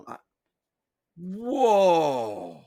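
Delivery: whoa said sarcastically. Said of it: "That's sarcasm".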